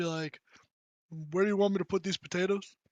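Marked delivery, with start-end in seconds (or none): 1.3-2.7 offhand, unbothered, understated, casual, tossed-off tone. Predicting how he'll casually walk in and speak: low casual tone. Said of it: "say in just kind of like a like a low tone".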